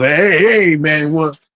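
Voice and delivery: thick New Jersey accent. Describing the accent he wanted for a character, demonstrating a thick Jersey accent. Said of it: "that Jersey thick ass accent".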